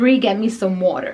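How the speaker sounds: plain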